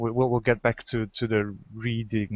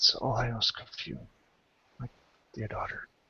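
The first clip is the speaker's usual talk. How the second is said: very weak, feeble, breathy, failing whisper; 6 dB quieter than usual. Voicing the sick father speaking to his other child: very weak voice. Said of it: "speaks with a very weak voice".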